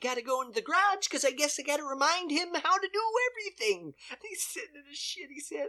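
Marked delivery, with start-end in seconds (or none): 0.0-3.9 bright, perky, chipper, upbeat voice. Retelling a movie scene where the wife talks on her phone: imitating a chipper wife. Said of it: "she's chipper".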